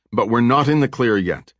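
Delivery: plain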